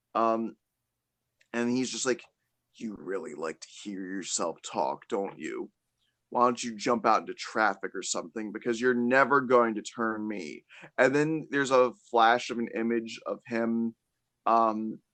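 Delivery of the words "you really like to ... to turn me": low, almost growly, intimidating, menacing voice. Retelling a scene from a show, imitating a character's low, growly, intimidating voice. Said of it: "this low, almost growly, intimidating voice".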